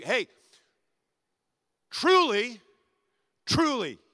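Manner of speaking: forceful, strong, very loud delivery. Retelling how the speaker interrupts the flattery: imitating a strong interrupting voice. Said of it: "interrupts him with a strong voice".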